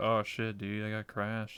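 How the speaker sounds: ordinary talk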